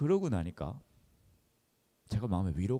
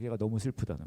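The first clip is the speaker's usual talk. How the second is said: usual speaking voice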